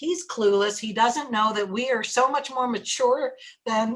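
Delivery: normal talking voice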